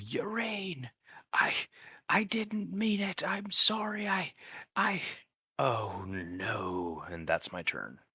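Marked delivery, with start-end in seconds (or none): 0.0-7.0 very high, very slow, swooping drawn-out yell. A player voices his character going after Urine, yelling. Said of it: "he's just gonna yell".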